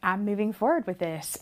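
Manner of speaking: ordinary talk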